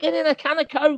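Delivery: put-on thick Scouse accent, pitched very high. Imitating fans on the sideline: thick Scouse accent. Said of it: "That was Scouse".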